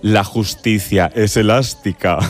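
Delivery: deep, wicked villain voice. Recalling a line from a TV series, quoting the character in a mock-evil voice. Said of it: "decía así con voz de muy mala, malísima".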